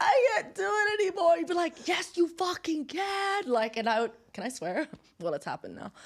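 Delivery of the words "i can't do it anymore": acted very high, loud, tearful crying voice. Retelling how she cried while he trained her, imitating own past crying. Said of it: "like just crying".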